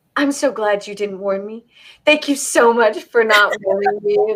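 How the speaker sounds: normal talking voice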